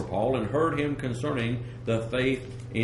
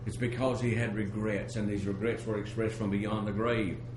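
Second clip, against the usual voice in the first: plain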